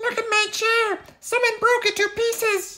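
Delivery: tiny little voice screaming, very high. Reading the bears story aloud as Baby Bear plops to the ground: wee little voice screaming. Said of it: "In his wee little voice, though the volume increases, he screamed".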